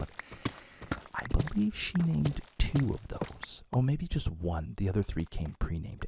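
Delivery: soft, hushed whisper. Talking about naming the animals, with his wife maybe in the next room: whispering. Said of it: "I have to whisper".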